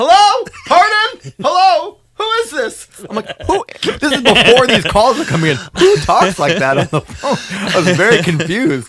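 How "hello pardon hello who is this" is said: put-on shrill, very high, slow, drawn-out old-fashioned yell. Mimicking a woman who answers the phone, imitating someone yelling. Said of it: "she's like yelling into it".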